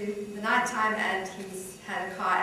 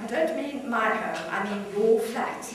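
usual speaking voice

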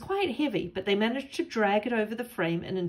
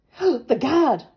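loud, gasping voice, words gasped out; 4 semitones higher, 8 dB louder than usual. Reading a character who hears that the guard is coming: gasped. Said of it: "gasped Katie".

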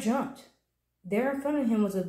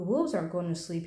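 ordinary delivery, nothing marked

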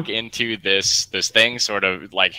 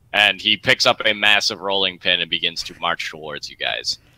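normal talking voice

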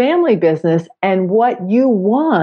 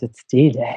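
radio announcer voice, much lower; 8 semitones lower than usual. Announcing the topic of today's episode to the co-host, in a radio voice. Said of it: "I'll use my radio voice".

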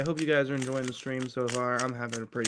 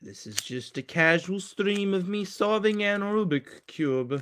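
fake Russian accent, pitched up, casual tone; 7 semitones higher than usual. A streamer introduces a casual Rubik's cube stream, Russian accent. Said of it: "Why am I doing this Russian accent?".

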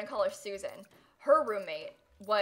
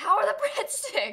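play-acted yelling, very high-pitched; 12 semitones higher, 4 dB louder than usual. Retelling how a loud guy greeted someone holding breadsticks: imitating someone yelling. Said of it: "he just yells about breadsticks".

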